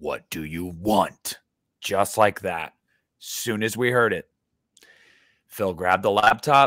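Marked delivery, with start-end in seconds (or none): 0.0-1.4 very stern, slow male voice. Retelling what a man's voice said to them, in a put-on stern man's voice. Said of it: "he like was very stern about it".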